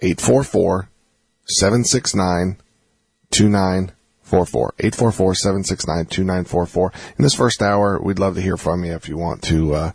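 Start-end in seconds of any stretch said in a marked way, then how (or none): 0.0-6.9 slow, deliberate delivery. Radio host giving listeners the call-in number, saying it slow. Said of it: "I'm going to say it slow".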